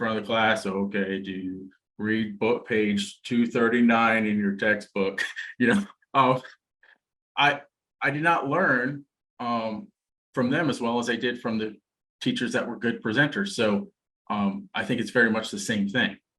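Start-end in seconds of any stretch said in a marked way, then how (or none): 0.7-5.2 flat, slow, droning monotone. Recalling school teachers who were poor presenters, imitating a monotone teacher. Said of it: "that monotone teacher".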